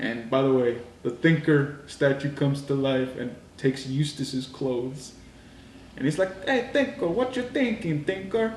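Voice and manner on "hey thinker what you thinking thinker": very high, goofy, silly put-on voice. Retelling a scene where a statue comes to life, in a funny voice. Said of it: "kind of sounding real funny".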